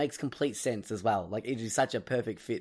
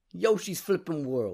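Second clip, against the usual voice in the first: put-on Brooklyn accent, pitched up; 7 semitones higher, 3 dB louder than usual. Co-host suggesting how to say the rumored game title: Brooklyn accent. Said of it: "Chuck like a Brooklyn accent on there".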